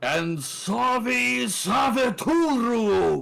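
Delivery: very high, loud, booming, resounding female call, drawn out. Narrating a scene, a voice calls out from the monument: loud booming female voice. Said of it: "like a loud booing voice".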